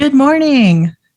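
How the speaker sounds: high, polite customer-service voice. Answering a speakerphone greeting on a first studio day, in best customer service voice. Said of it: "put on my best like customer service voice".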